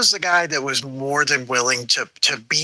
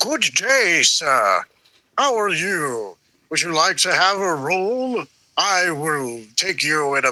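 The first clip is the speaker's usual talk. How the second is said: put-on theatrical gentleman voice. Describing an intimidating-looking guy who starts talking, the speaker does a Keith Lee theatrical gentleman voice. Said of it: "Keith Lee is an actual thespian".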